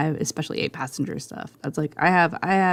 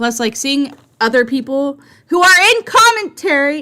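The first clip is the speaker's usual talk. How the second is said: nearly yelling, higher and louder, held back; 9 semitones higher, 7 dB louder than usual. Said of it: "I'm trying not to yell".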